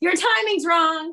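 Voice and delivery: exasperated, fed-up, high-pitched, slow, drawn-out pleading.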